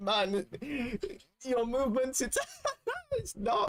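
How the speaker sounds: slow delivery squeezed past held-in laughter. Retelling how the judge reacted: imitating someone holding in laughter. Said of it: "he was trying to hold his laugh in".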